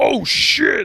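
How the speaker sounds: strange, weird voice, high-pitched and loud. Speaker recounts a funny movie scene to another person, weird Venom voice. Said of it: "Like he talks weird".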